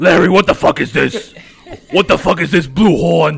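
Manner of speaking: put-on low chain-smoker voice. Doing Larry's impression of another speaker as a chain-smoking Brooklynite. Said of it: "I will do Larry's impression of you".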